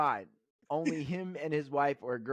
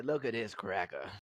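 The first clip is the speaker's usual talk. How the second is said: put-on cranky old man voice, lower; 6 semitones lower, 4 dB quieter than usual. Acting out a comment someone would post online: Uncle Ruckus voice. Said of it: "Why you sound like Uncle Ruckus".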